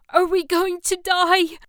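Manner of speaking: very high, shrill scream at top of voice. Narrator reading a woman beside the man she loves as an alarm wails: screamed. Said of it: "She screamed".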